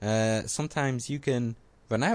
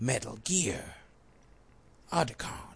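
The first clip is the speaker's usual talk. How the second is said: rough, growly voice. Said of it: "I've been working on my Solid Snake impression".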